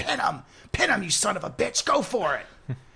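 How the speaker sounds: put-on pushy, insistent voice. Telling a wrestling story, the speaker acts out Vince Russo screaming at Hulk Hogan. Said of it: "Vince Russo starts screaming at Hulk Hogan".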